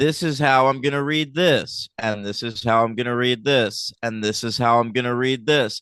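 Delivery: dull, flat, low monotone drone. Imitating how Julie reads everything when sight reading, Julie's flat monotone. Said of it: "She reads everything in a monotone".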